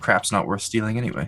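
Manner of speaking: hushed stage whisper, meant to be overheard. Player's character leaving the tent, meant for the shopkeep to overhear, hushed voice. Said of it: "he's going to say in a hushed voice".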